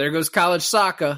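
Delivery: put-on loud, high-pitched Boston accent. Retelling a movie scene, quoting the character's line: Jeremy Renner Boston accent. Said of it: "Is that your attempt at a Boston accent?".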